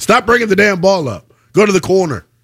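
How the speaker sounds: plain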